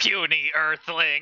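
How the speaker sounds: put-on villain voice. Playing a card game, pretending to be a villain: Yu-Gi-Oh villain voice. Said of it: "I'm pretending to be a Yu-Gi-Oh villain".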